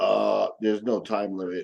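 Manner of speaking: very low, flat, deadpan monotone. Retelling how Jeff answered a question about time left, in Jeff's monotone voice. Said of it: "with his monotone voice go".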